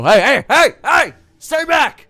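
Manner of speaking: loud shouting. Voicing guards who warn an approaching skeleton: guards shouting a warning. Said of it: "the guards all go".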